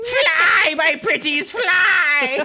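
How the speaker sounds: loud cackle with the word fly stretched out. Imagining the witch cashier as customers leave: cackling Wicked Witch of the West voice. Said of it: "one last cackle of madness".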